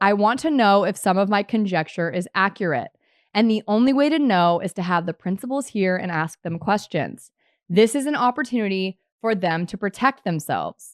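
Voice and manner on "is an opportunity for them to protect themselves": ordinary talk, nothing marked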